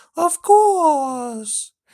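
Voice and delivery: very high, stretched-out voice. Retelling how Joe, asked if it will work, rubbed his neck and answered; imitating Joe's high voice. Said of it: "he said in a high voice".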